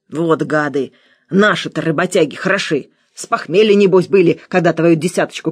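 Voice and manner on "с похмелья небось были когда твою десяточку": plain reading voice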